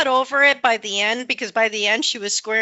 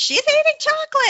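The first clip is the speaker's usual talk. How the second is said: mock shrieking scream, very high-pitched; 3 dB louder than usual. Retelling how two people screamed on coming back: imitating someone screaming. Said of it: "they're like, screaming".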